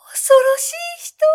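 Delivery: very high, shrill, shrieked shout. A narrator reads a woman's outcry at him, shouted. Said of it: "女は叫んだ".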